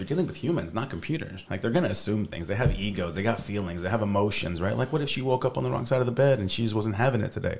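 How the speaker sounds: ordinary talk, nothing marked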